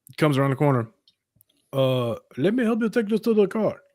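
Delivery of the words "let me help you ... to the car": put-on Indian accent, pitched up, helpful tone. Retelling what an older man said at a store: imitating an Indian accent. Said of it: "what accent is that?".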